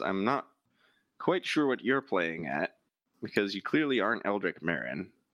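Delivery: utterly unruffled, even, very calm, composed delivery. Voicing a character who turns to the player and answers, very calm voice. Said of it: "He just turns to you in a very calm voice".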